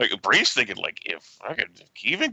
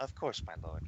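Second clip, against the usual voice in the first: very soft, hushed, sweetly courteous, honeyed tone; 5 semitones lower, 15 dB quieter than usual. In a role-play, Bree answers a character who told her to shut up, Bree's honeyed polite voice. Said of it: "says in like her honeyed polite voice".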